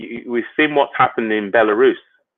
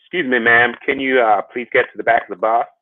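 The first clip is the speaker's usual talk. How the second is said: terrible put-on American accent. Acting out a bus scene from history, bad American accent. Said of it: "my American accent is terrible".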